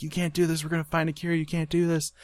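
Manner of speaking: play-acted, high-pitched screaming. Retelling a scene where a character screams through a door: imitating a character screaming. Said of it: "he's screaming from the other side".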